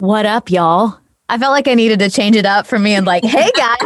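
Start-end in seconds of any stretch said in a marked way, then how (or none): 0.0-1.0 casual, try-hard cool mom voice. Speaker changes up their usual greeting to the group, in a cool-mom voice. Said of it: "You sounded like a cool mom".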